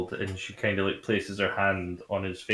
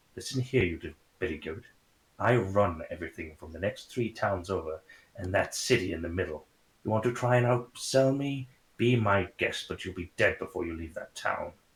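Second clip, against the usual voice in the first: half-whispered with real, strong aggression; 4 dB quieter than usual. A storyteller voices a woman leaning in to threaten the listener: aggressive half-whisper. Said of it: "leans in to you and whispers very aggressively".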